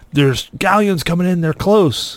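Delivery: put-on screaming delivery, pitched high. Retelling how a crewmate on the ship warned of galleons: imitating a crewmate screaming. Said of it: "the one guy we had left on the ship started screaming".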